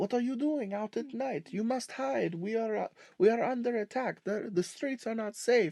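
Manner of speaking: put-on French accent. Describing a scene where a guy up on a bridge talks to you; French accent. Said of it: "talking to you with a French accent".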